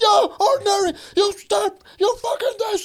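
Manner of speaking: very high, barking yell. Retelling a hated instructor yelling at someone not marching: imitating a yell. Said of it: "he's yelling at some guy".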